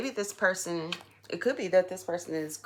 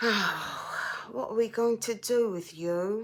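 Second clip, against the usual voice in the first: slow, terrible, fake English accent; 4 semitones higher than usual. Tarot reader addressing the cards in a reading; terrible english accent. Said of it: "That was a terrible English accent".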